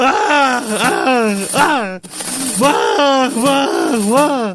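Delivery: exaggerated wailing cry. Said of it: "Bu sefer de ağlıyorum işte".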